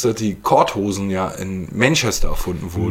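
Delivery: ordinary delivery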